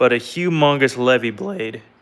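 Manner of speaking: voice cracking and breaking. Showing off his longest blade so far, voice cracking. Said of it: "sorry my voice cracked".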